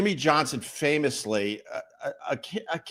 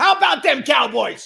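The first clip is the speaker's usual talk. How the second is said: high, loud, rough, crowing holler; 9 semitones higher, 7 dB louder than usual. Trying out an impression of the Dallas Cowboys figure: Jimmy Johnson impression. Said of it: "I'm working on my impressions".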